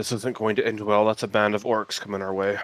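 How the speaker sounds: muttering quietly. In character, speaking aside to Bezoit: muttering quietly. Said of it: "mutter kind of quietly".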